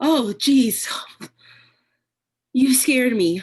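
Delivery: very loud, high, frightened, startled cry. Someone who expected no one suddenly sees another person; startled and scared. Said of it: "I didn't mean to react so scared".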